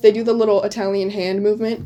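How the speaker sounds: normal talking voice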